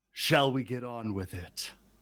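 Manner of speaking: put-on grandiose, affected demon-lord tone. Narrating the scene, speaking as Lord Immodius: affected demon lord voice. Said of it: "in his affected demon lord voice".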